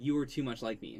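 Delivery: ordinary delivery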